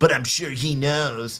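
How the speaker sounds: low, put-on, condescending talking-down tone. Quoting a woman's comment, the speaker imitates her condescending tone. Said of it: "she says in her condescending tone".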